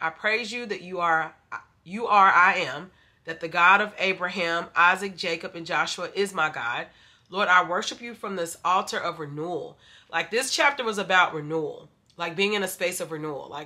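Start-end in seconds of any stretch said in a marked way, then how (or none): none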